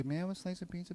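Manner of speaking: hushed, barely audible, half-hearted, without conviction. Showing the opposite of speaking meaningfully: half-hearted tone. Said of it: "As opposed to".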